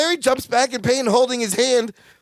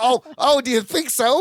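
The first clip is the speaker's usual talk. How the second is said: play-acted tone with obvious sarcasm. Retelling a sitcom scene, Larry replying to Balki: imitating Larry asking sarcastically. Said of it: "He asks sarcastically".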